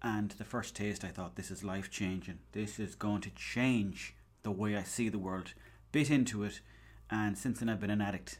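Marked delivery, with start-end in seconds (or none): none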